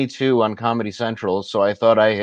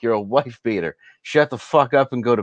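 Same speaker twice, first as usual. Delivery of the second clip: heated, furious, angry tone; 2 semitones higher than usual. Retelling what he screamed at a man in custody, re-enacting the screaming. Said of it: "screaming at him".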